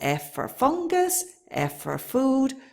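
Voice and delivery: F stressed.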